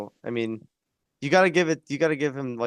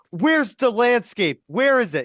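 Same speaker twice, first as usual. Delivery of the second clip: very high, loud, shrill, drawn-out screaming; 11 semitones higher, 6 dB louder than usual. Retell a film moment where a man screams at another, imitating someone screaming. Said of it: "He's just screaming at him".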